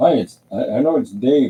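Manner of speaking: put-on very loud, high-pitched, thick East Indian accent. Speaker imitates a phone caller asking about lawn care, thick East Indian accent. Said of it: "very thick, you know, uh, East Indian accent".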